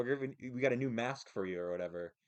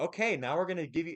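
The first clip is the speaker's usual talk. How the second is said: put-on high-pitched, talking-down kiddie voice; 6 semitones higher, 4 dB louder than usual. Retelling how a doctor spoke to them: imitating talking to a little kid. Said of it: "kinda talking to me like I'm a little kid".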